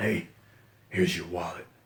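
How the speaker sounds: very deep, low, soft, hushed caped-hero voice. Acting out Batman handing back a stolen wallet, in Batman voice. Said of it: "that's my Batman voice".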